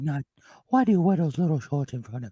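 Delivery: creepy cartoon bear voice, cuddly sound made creepy. Doing a voice that addresses Christopher Robin, a creepy Winnie the Pooh voice. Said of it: "It's like a creepy Winnie the Pooh".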